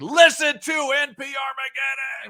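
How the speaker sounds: mock full-lungs yelling, pitched very high. Retelling a man with a boom box promoting the podcast, retelling a top-of-lungs yell. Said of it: "yelling at the top of his lungs".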